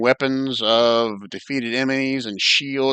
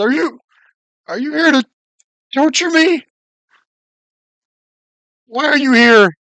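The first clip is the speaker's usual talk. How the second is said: put-on tearful, scared old man's voice, very high, very loud; 13 semitones higher, 9 dB louder than usual. Voicing a scared old man with tears welling up: scared old man on the verge of tears. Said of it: "tears welling up in his eyes".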